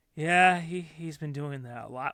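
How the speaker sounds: worn-out, weary, completely done, fed-up tone. Retelling the dad's reply to the mom: imitating a fed-up dad. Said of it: "you can just tell, is so done".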